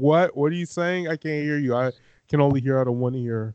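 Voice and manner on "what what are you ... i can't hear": usual speaking voice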